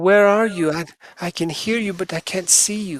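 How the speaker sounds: put-on high, small young girl's voice. Glancing into the cube with the skull, a voice calls out: little girl voice. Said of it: "the little girl's voice says".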